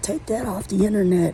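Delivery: mild mock yell, angry dad voice, cursing. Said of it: "started yelling and cursing".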